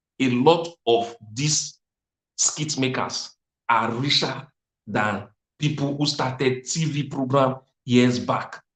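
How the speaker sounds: quiet soft voice. Speaker confiding a secret to the audience: telling it quietly. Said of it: "Let me tell you this quietly".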